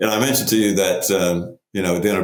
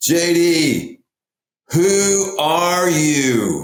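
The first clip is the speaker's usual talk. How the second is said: mock very high, very slow, drawn-out top-of-lungs yell; 11 semitones higher than usual. Retelling how the youngest son yelled across a loud table: imitating someone yelling. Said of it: "at the top of his lungs, as loud as he could say, he yells across the table".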